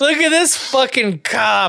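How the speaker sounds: put-on high yell. Retelling screaming at a cop from inside a crowd: retelling own scream at a cop. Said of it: "I definitely screamed at a cop".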